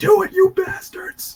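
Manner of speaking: put-on very high, mild yell. Joking about yelling from the top of a building, mock yelling. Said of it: "I'm just gonna yell at the top of the building".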